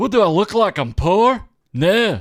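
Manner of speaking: loud, high-pitched, put-on Scottish brogue. Customer answering a McDonald's worker, in a Scottish accent. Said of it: "order in your Scottish accent".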